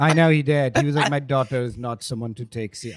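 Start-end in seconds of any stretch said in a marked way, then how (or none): 1.1-3.0 put-on dismissive, low-pitched Jamaican accent. Retelling what her revolutionary father said about her, in a jamaican accent. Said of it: "Is this your Jamaican accent?".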